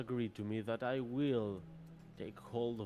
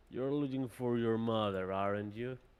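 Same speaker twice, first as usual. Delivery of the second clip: deep frost giant voice, louder; 5 dB louder than usual. The narrator voices a frost giant speaking, in a deep giant voice. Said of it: "you're going to hear a deep voice emit from it".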